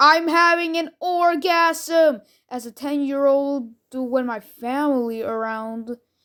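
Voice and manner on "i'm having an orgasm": high, mock scream at full volume. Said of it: "ended up screaming".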